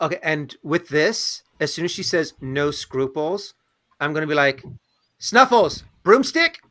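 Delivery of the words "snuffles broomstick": quizzical rising intonation on broomstick. Reacting as soon as she says no scruples, with a questioning rise. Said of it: "I'm kind of like in a questioning way".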